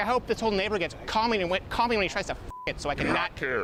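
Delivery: put-on flamboyant voice.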